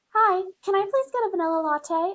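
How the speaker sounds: sweet polite voice, very high. Retelling a friend ordering at a drive-thru: imitating a service industry voice. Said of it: "her service industry voice".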